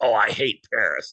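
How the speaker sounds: put-on, very slow, loud, anger-laced delivery. Speaker recalls the first thing a man they once worked for said; imitating an angry remark. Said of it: "like the anger in his voice".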